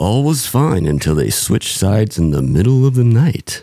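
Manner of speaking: terrible true-crime narrator voice. Opening a Dateline episode about a couple switching sides: terrible Keith Morrison impression. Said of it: "a terrible Keith Morrison impression".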